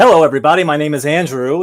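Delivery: TV game show announcer and host delivery. Retelling their twelve-year-old son walking in and greeting everyone, game show host voice. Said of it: "This is my game show voice".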